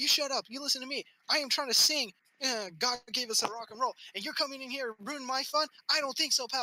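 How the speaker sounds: high, rattled-off drill-sergeant voice.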